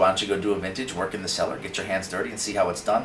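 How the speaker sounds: ordinary talk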